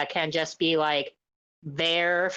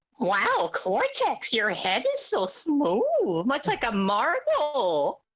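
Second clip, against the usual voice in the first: very slow, swooping, high sing-song drawl; 8 semitones higher than usual. Imagining Doofenshmirtz meeting Cortex, speaking as Doofenshmirtz voice. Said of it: "Doofenshmirtz is like".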